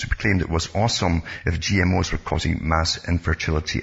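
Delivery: normal talking voice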